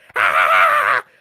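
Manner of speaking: croaky laugh like a toad. Showing how to laugh away your problems, laugh in a toad voice. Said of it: "This is me laughing in the toad voice".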